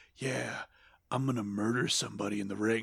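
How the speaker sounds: low, hushed half-whisper under the breath. Retelling a wrestling promo by Steve Austin: imitating Steve Austin half-whispering. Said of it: "talking in a whisper".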